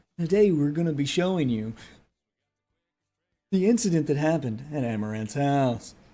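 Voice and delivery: boring, level, evening-news newscaster read. Mocking how the anchors in the news video talk: imitating a newscaster voice. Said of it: "the newscaster voice".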